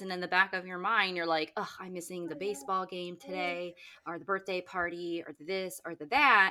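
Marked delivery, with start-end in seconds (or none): none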